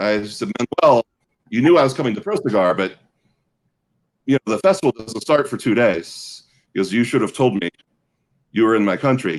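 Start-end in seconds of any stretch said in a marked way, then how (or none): 6.9-9.4 deep, thick, heavy, weighty low voice. Retelling what Manuel said when he heard she was in his country, imitating Manuel's deep, thick voice. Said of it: "he has a very deep, thick voice".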